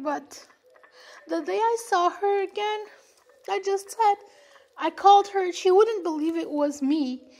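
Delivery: tearful crying with a cracking, breaking voice. Speaker apologizes for crying, then keeps telling her story, crying. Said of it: "I'm sorry, I'm crying".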